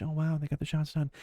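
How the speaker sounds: soft muted commentator voice. Showing how a shoutcaster should not talk, quiet hushed commentary. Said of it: "talking like this".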